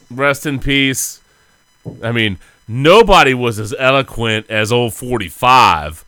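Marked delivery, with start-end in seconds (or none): 2.7-5.9 sarcasm laid on thick. Reacting to news of a death among friends: sarcastic. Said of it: "I'm being sarcastic, obviously".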